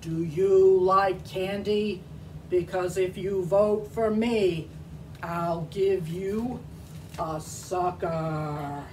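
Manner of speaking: deep donkey character voice. In a campaign skit against the elephant, the donkey asks voters for votes: donkey character voice. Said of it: "I'll be playing the part of the donkey".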